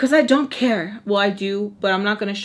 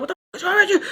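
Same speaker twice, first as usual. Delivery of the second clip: high-pitched frustrated outburst. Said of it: "getting all frustrated with me".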